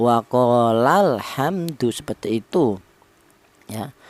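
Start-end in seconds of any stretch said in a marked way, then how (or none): 0.0-1.9 la syllable in waqolal pressed down with strong stress. Teaching how to read the tasniah form: strong stress on la. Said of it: "maka itu ditekan cara bacanya".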